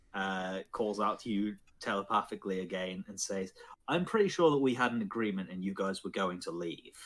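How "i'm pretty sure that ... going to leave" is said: plain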